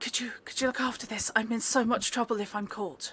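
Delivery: frightened, panicked voice. A hooded figure runs up and thrusts a bag at you: panicked voice. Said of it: "a panicked voice says".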